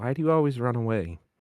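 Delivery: gentle, soft, soft-spoken voice. Narrating a sister's voice speaking right beside the listener, soft voice. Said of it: "you hear a soft voice".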